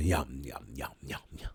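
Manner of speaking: pitch dropped very low, spoken slowly. Joking after sipping hot tea: Cookie Monster voice. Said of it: "like Cookie Monster".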